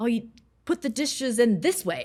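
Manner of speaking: harsh, nagging, faultfinding tone. Acting out a complaint about how the dishes were put in: imitating a harsh tone. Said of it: "having that more harsh tone".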